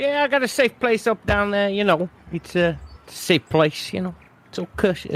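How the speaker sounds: poor put-on New York accent. Voicing Manhattan as he answers Agent Medusa, bad New York accent. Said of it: "I can't do it just me".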